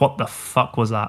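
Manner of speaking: ordinary talk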